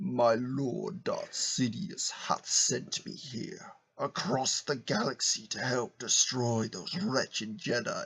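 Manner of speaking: slow, soft, forced deep villain voice. Voicing a fish sent by darth sidious, in an attempted deep voice. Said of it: "I'll try and do a deep voice".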